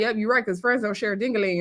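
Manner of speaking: usual speaking voice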